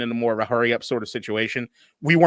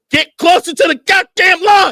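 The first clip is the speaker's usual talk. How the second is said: shrill screaming, very high and very loud; 10 dB louder than usual. Retelling watching the game on tv: imitating screaming at the tv. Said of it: "I was screaming at the T V".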